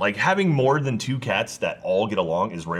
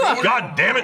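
put-on angry dad voice, higher; 13 semitones higher, 3 dB louder than usual. Ordering everyone off to Olive Garden: put-on dad voice. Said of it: "That's my dad voice".

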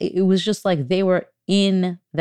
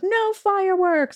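put-on very high-pitched little-kid screaming cry; 13 semitones higher than usual. Recalling a two-year-old during a lightning storm, imitating a toddler screaming. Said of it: "she would scream out".

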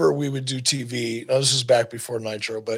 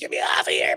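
put-on breathy, whispered little frog voice; 10 semitones lower than usual. Imagining a frog hooked on a windshield, screaming in a frog voice. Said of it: "Frog's probably screaming in a frog voice".

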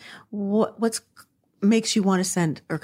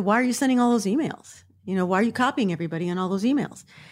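blaming, confrontational, accusing, pointed tone. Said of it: "it's not what she said, it's how she said it".

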